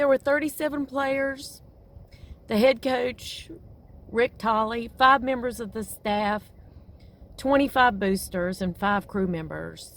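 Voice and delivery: choked-up voice on the verge of tears. Recounting a fatal plane crash, the speaker says they are going to cry. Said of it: "I'm sorry, I'm going to cry".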